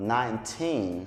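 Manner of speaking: put-on final syllable teen emphasized. English number lesson in Portuguese, nineteen said with stress on teen. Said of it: "o teen fica bem marcado".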